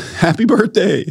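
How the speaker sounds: put-on shout, pitched very high. A father retells the moment his baby was born, retelling a yell. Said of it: "And I yelled".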